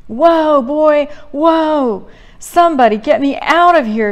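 high, loud panicked yelp. Narrator reads a woman's cry as her horse breaks into a gallop, yelping. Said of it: "she yelps".

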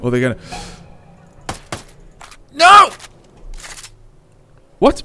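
very high-pitched, loud, frantic, panicked outburst. Playing a game, sure the others know where they are, panicking. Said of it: "I'm panicking".

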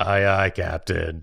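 put-on grizzled, weathered old adventurer voice. Answering a cartoon captain's call as a grizzled old adventurer: grizzled old adventurer voice. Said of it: "That's like a grizzled old adventurer watching".

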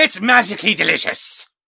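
put-on belted out loud in a rough Irish accent. Speaking to someone doing an impression, perform their Lucky the Leprechaun voice. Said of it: "doing your impression of Lucky the Leprechaun Laddie".

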